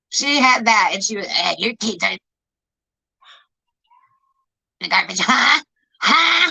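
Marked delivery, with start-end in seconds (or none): 1.2-6.5 spiteful, nasty, hateful voice with swooping pitch. Retelling what a woman said on a stream: imitating a mean, hateful voice. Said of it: "that mean, fucking hateful voice".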